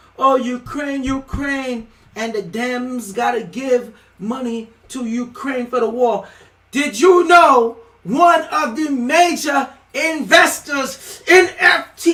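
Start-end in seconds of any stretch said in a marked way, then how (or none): 6.7-12.2 riled, wound-up, agitated, slow delivery. Speaking to everybody who's been going on about Ukraine, worked up. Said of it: "Let me calm down".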